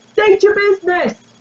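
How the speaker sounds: very high, sharp guard-style call-out. Voicing a guard on a fence who calls out to visitors: guard calling out. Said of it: "one calls out".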